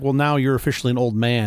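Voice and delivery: ordinary talk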